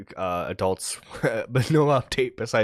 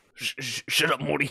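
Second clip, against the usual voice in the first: poorly done, high-pitched, stuttering cartoon voice; 5 semitones higher than usual. Answering the other's Rick impression with a crappy Morty impression. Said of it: "their crappy impression of Rick and Morty".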